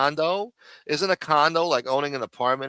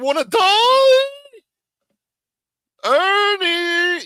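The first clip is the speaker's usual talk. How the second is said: very loud, shrill angry yell with voice cracking high; 8 dB louder than usual. Explaining how Dom sounds when riled, the speaker imitates Dom's angry voice crack. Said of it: "when he gets angry, his voice cracks".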